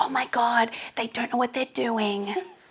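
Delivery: half-whispered, hushed stage whisper. Retelling what front-row girls said at a first live show: imitating a half-whisper. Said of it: "they're all whispering like".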